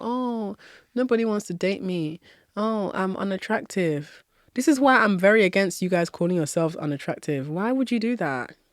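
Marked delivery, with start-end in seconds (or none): 0.0-4.2 slow, moping, self-pitying whining moan. Imitating a caller who feels sorry for herself: mocking self-pity. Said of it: "the energy of feeling sorry for yourself".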